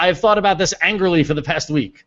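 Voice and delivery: ordinary talk, nothing marked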